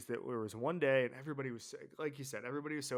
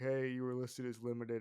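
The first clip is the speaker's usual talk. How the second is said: acted, mock-sheepish tone; 5 dB quieter than usual. Retelling approaching a massive older player on a friday, imitating a sheepish question. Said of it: "we like sheepishly went up to him".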